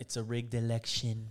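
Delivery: very quiet, muttered politician-style voice. Joking about a rigged election with another speaker: Trump voice. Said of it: "I even said it in a Trump voice".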